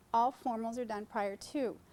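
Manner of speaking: ordinary talk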